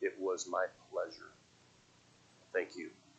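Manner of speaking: soft, whimpering, wavering voice. Retelling what an older man said back to the speaker, retelling a whimpering reply. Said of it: "in a whimpering voice".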